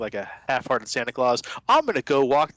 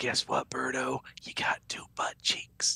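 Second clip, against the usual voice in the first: soft, breathy whispering; 11 semitones lower, 8 dB quieter than usual. Whispering in character to a party member during an ambush: whispering in character. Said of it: "I whisper".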